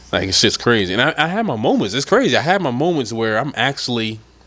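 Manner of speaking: usual speaking voice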